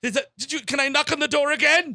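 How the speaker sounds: high, loud, urgent desperate pleading.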